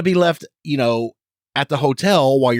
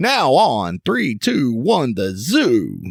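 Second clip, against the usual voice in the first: very slow, drawn-out radio DJ voice. Bringing back a classic bit, trying out a DJ voice. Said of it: "use my D J voice".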